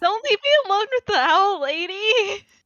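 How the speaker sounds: high whine, cracking and stretching out "lady". As Fletch, to a companion who is already going, whining with a voice crack. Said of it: "This is Fletch whining. That voice crack, all me".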